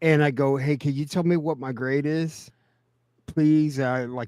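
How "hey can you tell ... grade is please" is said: put-on childlike, pleading, begging voice. Retelling a phone call asking for a grade: imitating own begging like a little kid. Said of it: "fucking begging like a little kid".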